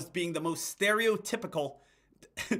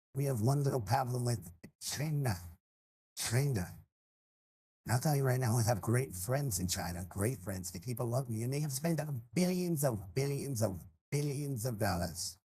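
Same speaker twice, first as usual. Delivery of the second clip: put-on brash politician voice, lower and quieter; 6 semitones lower, 4 dB quieter than usual. Trying out another voice impression: Donald Trump impression. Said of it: "is there a Trump one?".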